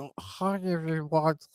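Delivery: dorky, nerdy voice. Imitating the other speaker's earlier voice: Adam Sandler being nerdy. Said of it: "you sounded like Adam Sandler being nerdy".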